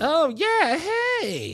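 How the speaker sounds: put-on very high, sing-song, brightened tone. Retelling how a woman answered the phone: imitating a perked-up voice. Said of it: "voice perked up".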